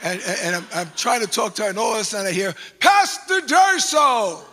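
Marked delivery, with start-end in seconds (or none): 2.8-4.3 put-on broad, thick Jamaican accent, loud and high. Retelling how a police officer called out his name: strong Jamaican accent. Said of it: "in this strong Jamaican accent".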